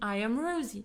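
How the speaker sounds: ordinary talk, nothing marked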